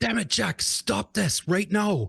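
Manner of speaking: raw, rough, acted yell, very high. A character pins his brother to the ground in a scene; shouting. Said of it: "Desmond shouts at who appears to be".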